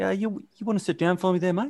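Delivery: put-on sweet, threatening tone. Retelling how a man spoke to a guy in trouble, imitating a menacingly nice tone. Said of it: "That's why it was so menacing".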